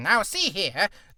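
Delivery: cartoon villain character voice. Showing the voice they used to do: Skeletor voice. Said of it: "Whenever I used to do the Skeletor voice".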